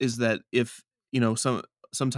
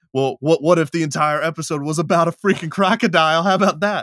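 loud, high, excited, cocky, belted-out voice. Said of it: "I'll be like".

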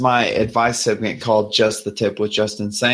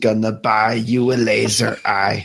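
put-on slow delivery with a faint Jamaican accent. Voicing Banshee in a game, with a slight Jamaican accent. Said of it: "So Banshee is now slightly Jamaican".

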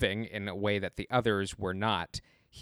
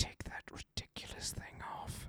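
mock muttering through teeth, much quieter. Retelling a film scene, imitating Snoke muttering through teeth. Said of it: "under his breath and between his teeth".

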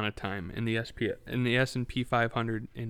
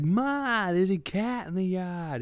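put-on goofy, dim-witted New York accent, high, drawn out; 8 semitones higher than usual. Imitating a guy in a viral video calling to his mom, stupid new york accent. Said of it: "stupid New York accent".

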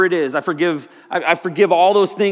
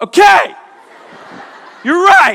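very high, very loud, shrill voice; 13 semitones higher, 9 dB louder than usual. Retelling backing down after a tattooed man told them to leave: high-pitched voice. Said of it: "My voice is, you know, high pitch".

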